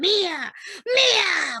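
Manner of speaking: booming, resounding, drawn-out demon voice on "mía". Retelling an exorcism, quoting the demon leaving: imitating a booming demon voice. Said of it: "con una voz así retumbante".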